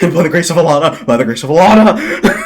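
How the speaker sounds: overjoyed, high, loud, laughing relief.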